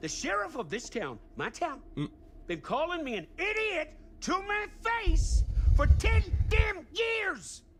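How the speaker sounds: very high, swooping, furious angry shouting. A game character rants about the town sheriff, mad yelling. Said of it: "he's definitely mad".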